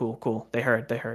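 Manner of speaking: ordinary talk, nothing marked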